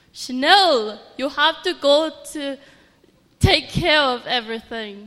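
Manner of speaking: very loud put-on Jamaican accent. Imitating how her boss from Jamaica talks to her, in a Jamaican accent. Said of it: "she talks like this".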